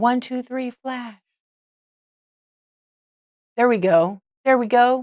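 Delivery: loud yelling. Counting down to a flash, yelling. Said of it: "I'm yelling, aren't I?".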